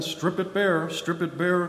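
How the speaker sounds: usual speaking voice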